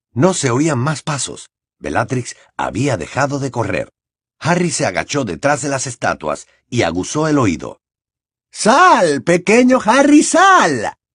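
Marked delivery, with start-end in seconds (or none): 8.5-10.8 put-on very high, very slow, shouted baby-voice taunting. A pursuer calls to a boy hiding behind statues, shouting in a mocking childish voice. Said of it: "gritó Bellatrix, imitando una voz infantil".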